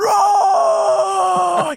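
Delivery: mock scream, very high and very loud. Retelling searching outside for a friend, reenacting screaming his name. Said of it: "And I'm screaming for him".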